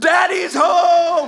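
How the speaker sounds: very high, loud, thrilled acted cheer, home stretched. Retelling answering a child at the door: retelling own pumped-up reply. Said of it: "I'm so pumped".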